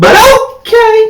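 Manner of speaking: very high, slow, stretched-out, sugary sweet voice. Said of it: "in my candy voice".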